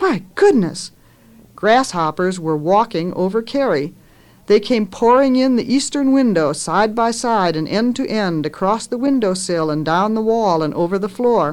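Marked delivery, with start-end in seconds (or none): 0.0-0.9 high, cried-out exclamation. Narrator reads ma turning around and crying out. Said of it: "Then she cried out".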